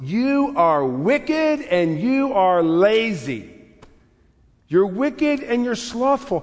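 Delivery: stern, harsh, high, lazy and stretched out. Quoting the master's reply to the third servant: speaking harshly as the master. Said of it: "Why does he speak to him so harshly?".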